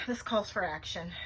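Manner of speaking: plain reading voice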